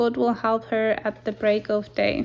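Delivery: ordinary delivery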